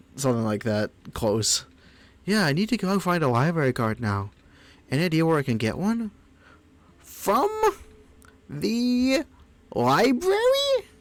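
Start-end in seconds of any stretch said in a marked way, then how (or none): 7.0-10.8 very high, squeaky, swooping character voice. Recalling a character's first line to a player, squeaky character voice. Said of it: "It wasn't quite this squeaky".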